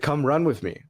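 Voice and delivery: earnest, no-nonsense, pretty serious tone. Retelling how an athlete called out during warm-up laps: imitating a serious tone. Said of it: "he said it in, like, a pretty serious tone".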